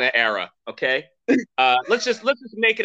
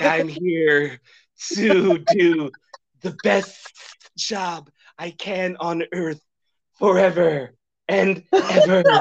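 slower acted hissing snake voice; 3 semitones higher than usual. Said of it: "it's a snake and it's played by".

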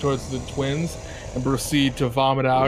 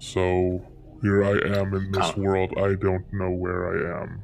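put-on dragon voice, much lower; 6 semitones lower than usual. Voicing the rescued dragon answering where it comes from: dragon character voice. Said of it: "My home was actually in the Fey Realm".

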